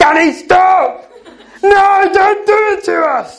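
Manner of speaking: very high, slow, loud shout.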